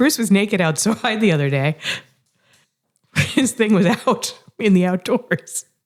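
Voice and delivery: laughing, giggling through words. Telling a story to the others, laughing while talking. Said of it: "I'm just thinking about it and laughing".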